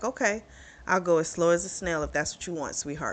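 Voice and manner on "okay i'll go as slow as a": plain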